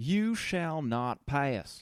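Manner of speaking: very slow, thick country Southern drawl. Reading lines from a book aloud in a deep country southern accent. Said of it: "I'm going to read these out in a country deep Southern accent".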